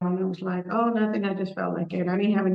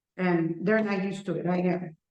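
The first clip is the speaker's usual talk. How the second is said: ordinary talk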